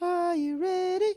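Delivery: high falsetto voice.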